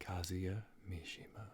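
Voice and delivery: low, breathy voice. A podcast host starts introducing the characters: breathy and low. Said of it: "Why are you saying it all breathy and low?".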